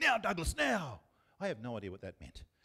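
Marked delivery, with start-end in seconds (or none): 0.0-1.0 very loud, very high, enthusiastic shout. Recalling his dad yelling from the football sidelines: imitating dad yelling. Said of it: "he used to yell this really weird thing".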